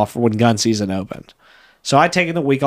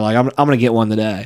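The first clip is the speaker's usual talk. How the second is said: usual speaking voice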